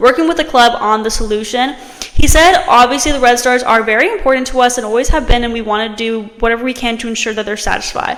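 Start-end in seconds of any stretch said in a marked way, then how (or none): none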